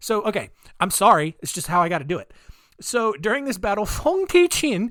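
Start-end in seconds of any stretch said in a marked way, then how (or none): 3.8-4.9 very high-pitched put-on Vietnamese accent. Speaker says a vietnamese captain's name while telling her story; put-on vietnamese accent. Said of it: "I've got to do the accent to say it right".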